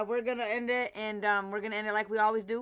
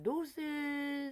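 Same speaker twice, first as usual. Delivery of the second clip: cute, high put-on character voice; 5 semitones higher, 7 dB quieter than usual. Imitating how he cutely says deuces, in JJ voice. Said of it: "So I'm gonna do it in my J J voice".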